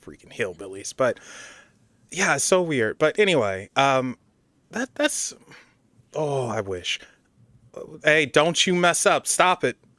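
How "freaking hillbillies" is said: sounding thoroughly let down, disappointed. Complaining that lotto winners are always hillbillies: disappointed. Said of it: "hear the disappointment in my voice".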